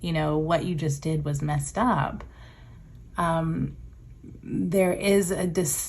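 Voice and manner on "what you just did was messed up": ordinary delivery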